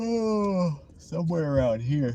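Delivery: loud yawn, words pushed through, drawn-out high "oh". Talking while looking around a parking lot, yawning mid-sentence. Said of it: "as I'm yawning, I say that".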